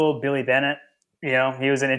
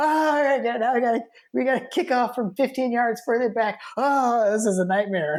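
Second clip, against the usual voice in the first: very high, shrieking, exasperated screaming; 10 semitones higher than usual. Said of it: "I was just screaming at the T V".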